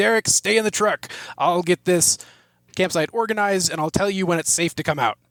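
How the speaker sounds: firm, protective telling-off. Playing Sven ordering Derek to stay in the truck: yelling at Derek in character. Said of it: "I'm yelling at you".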